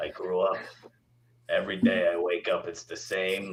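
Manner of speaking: put-on old 1940s New York woman, raspy smoker's voice. Asked for an example, the speaker demonstrates in an old 1940 New York woman voice. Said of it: "my dick would sound like an old New York woman from 1940".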